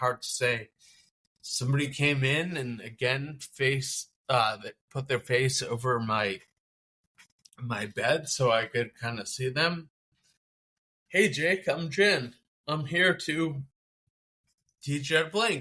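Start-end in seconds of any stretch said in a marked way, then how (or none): 11.1-15.6 mock upbeat, confident, bright, pitched up, no questioning rise. Retelling how someone arrived to teach blinking: imitating someone very positive. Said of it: "she came in so positive".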